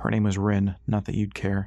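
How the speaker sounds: ordinary delivery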